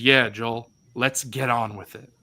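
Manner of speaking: mocking, mimicked intonation. Retelling a Last of Us scene where Bill mimics Joel's intonation. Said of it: "Just imitating the exact intonation and tone of Joel's voice".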